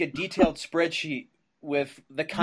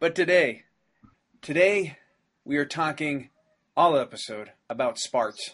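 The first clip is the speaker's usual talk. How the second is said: put-on Utah accent, "sparts" in Utah pronunciation. Introducing today's episode topic, put on a Utah accent. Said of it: "That was my Utah accent".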